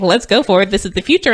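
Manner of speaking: ordinary talk, nothing marked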